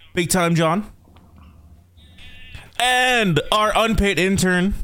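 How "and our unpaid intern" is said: unpaid drawn out high and slow. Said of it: "Emphasis on the unpaid".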